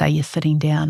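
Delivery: ordinary delivery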